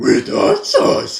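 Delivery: loud, deep cartoon dog voice, jumping high on "hot sauce". Showing how Scooby said the line, Scooby voice jumping high on hot sauce. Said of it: "with in the deep in the low pitch, and then got to the high pitch when I said hot sauce".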